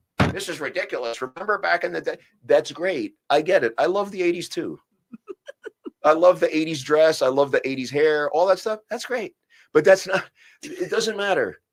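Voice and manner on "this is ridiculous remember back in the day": put-on griping, complaining old-timer voice. Mocking how some people sit around complaining: imitating an old person. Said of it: "like the old person thing".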